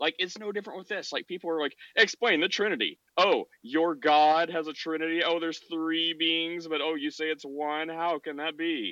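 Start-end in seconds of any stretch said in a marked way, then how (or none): 1.9-8.9 put-on, slow, haughty, arrogant know-it-all tone. Mimicking people who question the trinity, the speaker uses a mock-arrogant voice. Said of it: "That's my arrogant voice".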